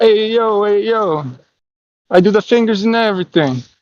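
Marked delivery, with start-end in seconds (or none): 0.0-1.2 mock Italian accent, higher. Joking about wood oven pizza, doing the fingers: put-on italian voice. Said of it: "It's like Italian".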